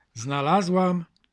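cheerful, joyful calling out. The queen, picking up a heart-shaped stone, calls out cheerfully. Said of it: "zawołała wesoło królowa".

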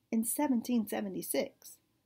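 ordinary delivery

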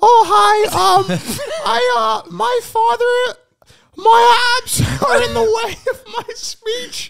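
extremely high put-on voice. Mock voice audition for a seven-year-old role, highest possible voice. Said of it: "This is like the highest I can go".

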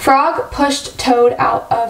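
ordinary delivery

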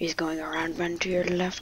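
soft, unvoiced, whispered calling out. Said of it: "What'd you whisper?".

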